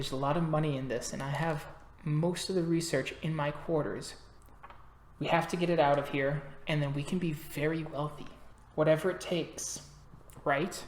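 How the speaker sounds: soft, hushed, secretive half-whisper. A game master voicing a character who half-whispers into Wilson's earpiece: half-whispering. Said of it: "she kind of whispers into Wilson's earpiece".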